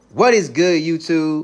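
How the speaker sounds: booming, high, very loud, drawn-out shout. A podcaster greets his YouTube audience at the start of the episode, loud. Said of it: "I get a little loud sometimes".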